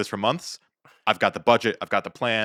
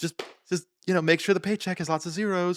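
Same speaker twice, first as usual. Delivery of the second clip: sugary, sweet, pitched-up pleading tone; 9 semitones higher, 4 dB quieter than usual. Retelling a woman's reply to the man who turned to her, mock-sweet request. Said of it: "she just puts on the face".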